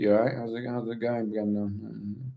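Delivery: wooden, flat, lifeless low mutter. Mocking how a castmate talks as himself, wooden Charlie impression. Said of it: "it's very wooden".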